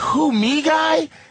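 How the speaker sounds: acted snotty, sarcastic voice. Imitating how another person sounds: imitating a snarky tone. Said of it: "'cause he sounds snarky".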